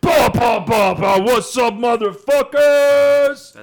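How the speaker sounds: very high, very loud shout.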